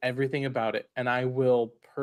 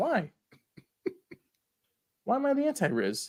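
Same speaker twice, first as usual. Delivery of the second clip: taken aback, shocked, much higher pitch; 13 semitones higher than usual. Called the anti-Riz by another speaker, he asks why: shocked. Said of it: "Why do you sound shocked about this?".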